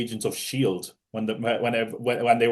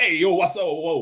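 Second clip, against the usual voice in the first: exaggerated, high-pitched New York street accent; 6 semitones higher than usual. Mocking how Marvel characters from New York could talk: exaggerated New York accent. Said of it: "everyone in the M C U is from New York, but they're not all going around like".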